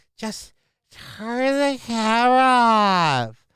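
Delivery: put-on loud whisper. Mocking a person in a video asking to stop filming: imitating someone whispering loudly. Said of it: "I'm whispering so you can't hear".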